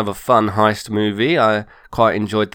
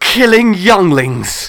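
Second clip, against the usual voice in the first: bad, overdone, loud, high-pitched dramatic line delivery; 9 semitones higher, 6 dB louder than usual. Retelling a movie scene that made them laugh: imitating an awful dramatic line read. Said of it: "It's really awful".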